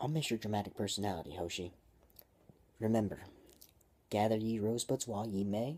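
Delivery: ordinary delivery, nothing marked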